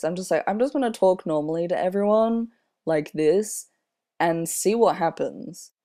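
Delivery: ordinary talk, nothing marked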